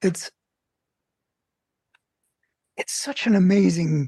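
choked up, voice catching with emotion. Recounting a story of people who helped others, choking up. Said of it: "I'm actually choking up".

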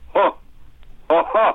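short burst of laughter. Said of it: "burst of hilarity ... something to the effect of".

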